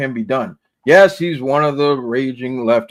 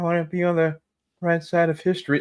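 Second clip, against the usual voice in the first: mocking soft-spoken man's voice, no bass; 4 semitones higher, 8 dB quieter than usual. Mocking a man quoted as lacking bass in his voice: mocking a soft voice with no bass. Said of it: "put some bass in your voice".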